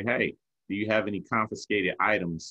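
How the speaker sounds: usual speaking voice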